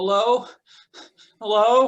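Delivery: high, loud shout calling out. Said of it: "you hear somebody calling out".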